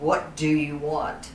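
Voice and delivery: big, deep, resounding, booming voice. Storyteller retelling the voice that came from the mountain, booming voice. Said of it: "this booming voice comes through".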